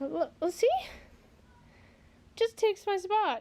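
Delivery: breathless, puffing speech. After a little workout, out of breath. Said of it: "I'm already out of breath".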